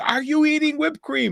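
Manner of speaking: very high-pitched, shrieking scream. Retelling his father sneaking whipped cream at night, imitating mom screaming. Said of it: "my mom is screaming".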